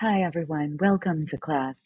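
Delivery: fake soothing, calm yoga-teacher voice. Recalling faking it at the start of class: put-on yoga teacher voice. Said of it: "put on my yoga teacher voice".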